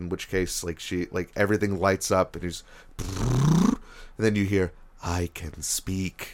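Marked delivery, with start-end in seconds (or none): 5.0-6.3 spooky eerie voice, quieter and much slower. Describing a game moment, voicing what you then hear, eerie voice. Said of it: "kind of an eerie voice".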